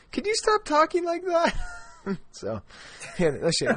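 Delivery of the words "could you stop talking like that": put-on much higher-pitched young girl's voice. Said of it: "my poor daughter's like".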